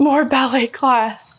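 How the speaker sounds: put-on, high, tearful sobbing voice. Retelling a childhood home video, imitating own sobbing through tears. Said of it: "you could hear me say that through my tears".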